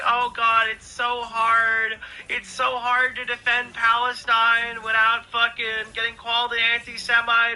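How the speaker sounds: loud, drawn-out, sobbing, weepy crying voice. Mocking a person who starts crying over criticism: imitating someone crying. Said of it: "and then just starts fucking crying".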